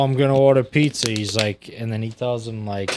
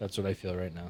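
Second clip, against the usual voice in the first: ordinary talk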